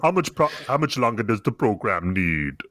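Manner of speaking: put-on deep, low-pitched Caribbean accent. Discussing Bane's accent, quoting one of his lines: Bane impression, Caribbean accent. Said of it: "he sounds like Sebastian from Little Mermaid".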